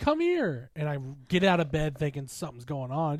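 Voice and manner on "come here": very high screamed shriek. Retelling being woken at two in the morning: imitating someone screaming. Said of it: "She screams".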